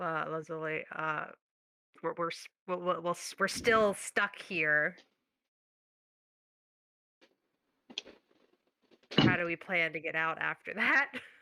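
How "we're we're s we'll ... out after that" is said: hushed, voiced stage whisper. Half-whispering to a companion that they are still stuck here: hushed half-whisper. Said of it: "hush whisper to".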